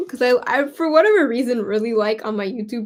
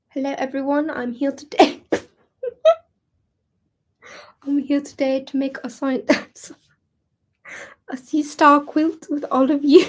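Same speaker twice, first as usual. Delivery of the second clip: clumsy, bad, put-on British accent; 2 semitones higher than usual. Asked by someone to do the British accent, doing a British accent. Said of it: "can you do the British accent?".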